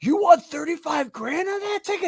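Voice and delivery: play-acted very high, loud drunken shout. Retelling a hammered buddy yelling at a bettor: imitating a buddy yelling. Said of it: "He just yelled".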